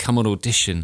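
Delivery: ordinary talk, nothing marked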